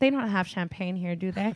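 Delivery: deadpan, dead-serious put-on child voice. Retelling a three-year-old's question at a coffee shop: imitating a dead-serious child. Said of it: "dead ass".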